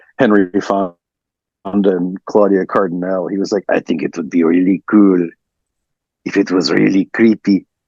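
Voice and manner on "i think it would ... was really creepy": bad, unconvincing put-on French accent. Retelling what the director said, doing a Dario Argento impression. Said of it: "Sorry, that was French".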